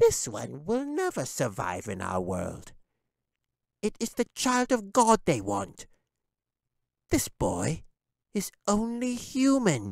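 sneering, very high, swooping goblin voice. Narrating a story, the goblin dismisses the human boy, sneering. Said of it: "the goblin sneered".

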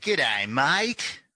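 high, terrible put-on Australian accent. Asked by the host for an opening greeting, the guest offers a terrible australian accent. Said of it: "it's a terrible accent".

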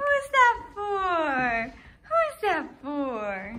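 high, sing-song dog voice, "for" drawn out. Giving a toy to the dog, Atlas: dog voice. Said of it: "I'm doing the dog voice".

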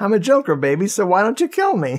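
high, swooping sing-song villain voice. Acting out a character auditioning for a film: imitating Tony as the Joker. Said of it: "He came into the, uh, the audition like".

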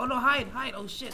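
loud, high-pitched panicked yelling.

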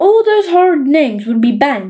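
plain reading voice

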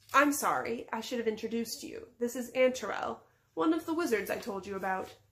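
ordinary delivery, nothing marked

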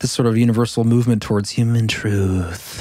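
creepy, eerie delivery. Explaining an idea to the other speakers: creepy delivery. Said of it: "You said that creepily".

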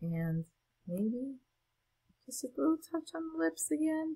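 quiet, soft, careful speech, slightly high. Narrating as she adds a little line on the lips, talking quietly. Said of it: "I feel like I have to talk quiet".

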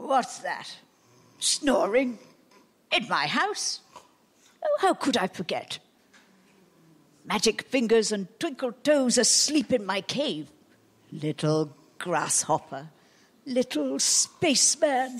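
menacing big giant voice, speaking in broken phrases. Playing the giant in an audio drama, in a giant voice.

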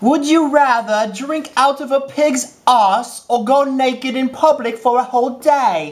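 put-on British accent, high and slow. Reading a fan's question aloud: british accent. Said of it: "should I say this in a British accent?".

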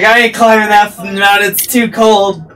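loud, high-pitched mock grumble. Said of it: "She's like".

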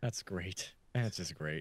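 sarcastic tone. During a game stream, reacting to another player, sarcastic. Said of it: "That's sarcastic, by the way".

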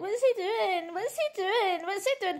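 high, whiny nagging. Mocking a woman you can't stand, in a mocking whiny imitation. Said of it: "Literally whining, moaning".

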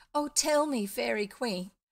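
joyful exclamation. Bumpo calls out to the hidden fairy queen, crying out with joy. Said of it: "cried Bumpo, clasping his hands with joy".

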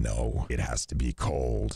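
very deep, dropped-down put-on voice. Acting out what they'd say back to people asking, in a very deep voice. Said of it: "Why is your voice so deep?".

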